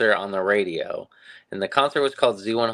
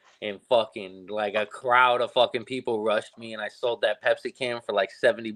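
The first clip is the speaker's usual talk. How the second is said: ordinary talk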